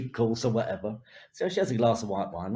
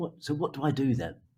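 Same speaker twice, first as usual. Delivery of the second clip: small, tiny little voice; 3 semitones higher than usual. Retelling a woman backstage about to introduce the show, in a tiny little voice. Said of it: "In this tiny little voice".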